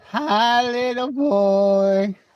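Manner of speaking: high, teasing, mocking voice, boy drawn out. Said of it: "they're going like".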